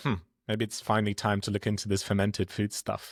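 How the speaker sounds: ordinary delivery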